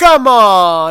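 put-on Italian tough-guy accent. Imitating her saying it back when the computer won't load, Italian goomba accent. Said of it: "it sounds like an Italian Goomba".

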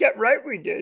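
very high, tiny alien sage character voice. A podcast host recapping a game, in a Yoda impression. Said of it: "That was a pretty good impression".

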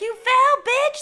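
very high, loud, taunting scream. Recounting the first skater falling on tv: retelling screaming at the tv. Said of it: "I was screaming at the TV".

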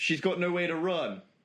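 normal talking voice

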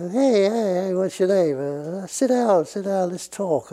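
slow, relaxed, easygoing mafia-style schmooze. Imitating Jimmy greeting people in a meeting: imitating Jimmy, mafia-like. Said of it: "he was like a mafia".

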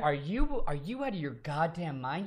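put-on younger, college-age voice. Imitating his twenty-one-year-old self scolding him for being disgusted: imitating College [name]. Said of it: "if College [name] saw this and me, like, being disgusted, he'd be like".

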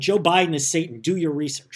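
ordinary delivery

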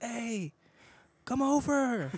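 put-on very high holler, as if from afar. Retelling how the neighbors called across the field: imitating someone yelling. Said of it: "they would yell to me".

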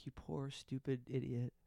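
mock whispering. Joking about stroking a reality star's head: put-on whisper. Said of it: "stroke her head and just whisper".

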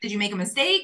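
plain

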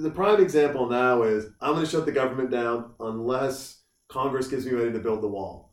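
normal talking voice

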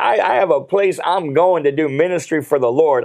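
ordinary talk, nothing marked

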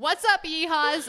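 shrill screaming. Recounting a woman shouting at drivers from her car window, retelling her scream. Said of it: "she screams".

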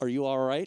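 play-acted grave, stern, no-nonsense questioning tone. Retelling a movie scene where the father asks a question: imitating a stern question. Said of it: "very sternly".

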